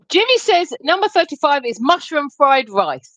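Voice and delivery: ordinary talk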